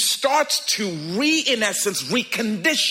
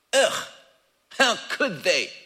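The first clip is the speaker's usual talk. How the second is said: put-on snobby, stuck-up, snooty rich-kid voice. Showing listeners how they sound when talking like that, in a snooty rich kid voice. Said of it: "you are talking like a snooty rich kid".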